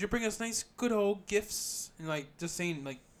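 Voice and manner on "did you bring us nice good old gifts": condescending mock British accent, higher and louder. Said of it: "they're trying to be British or something".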